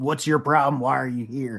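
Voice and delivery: put-on chain-smoker voice. Retelling what a lady asked when the speaker walked in, Beetlejuice caseworker smoker voice. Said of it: "She's been smoking a pack a day".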